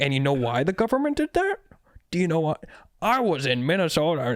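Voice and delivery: steamrolling, insistent rant, talking right over. Retelling a podcast guest steamrolling the host: imitating Jesse Ventura. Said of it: "He's like".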